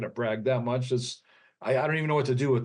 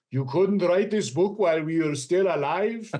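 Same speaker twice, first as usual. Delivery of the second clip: put-on Hungarian accent, higher-pitched; 5 semitones higher than usual. Recalling a book the speaker's parents wrote, hearing the mom's reaction: imitating mom's Hungarian accent. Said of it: "my mom with her Hungarian accent saying".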